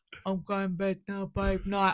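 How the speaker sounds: bone-dry, terse, clipped delivery. Recalling the voice message he sent early on, imitating a very deep voice. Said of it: "you have a very deep voice".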